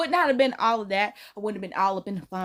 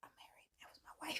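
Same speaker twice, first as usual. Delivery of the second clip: whispered, barely voiced, very soft and hushed. Retelling how a friend confessed being married: imitating someone whispering.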